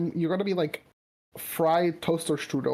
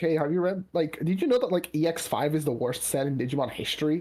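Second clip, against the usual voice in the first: ordinary delivery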